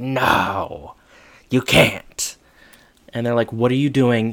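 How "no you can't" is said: put-on fairy-tale troll voice. Retelling someone jumping in front of people on the stairs, troll voice. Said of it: "a troll impression".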